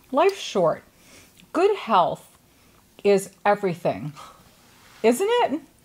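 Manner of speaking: speech muffled by full mouth. Speaker talks while eating ice cream, talking with mouth full. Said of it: "As I talk with a mouthful of ice cream".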